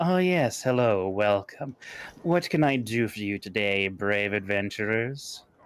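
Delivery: mocking, sarcastic, sardonic tone. Voicing a shopkeeper greeting adventurers: sardonic shopkeeper voice. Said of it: "she smiles in that sardonic way of hers and says".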